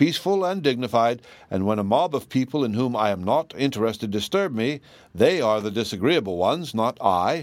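plain reading voice

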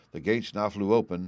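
ordinary delivery

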